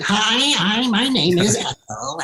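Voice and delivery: put-on slow old lady voice. Talking about her mother's voice on the phone, she demonstrates an old lady voice. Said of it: "you know how you have like an old lady voice".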